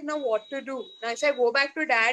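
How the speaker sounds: normal talking voice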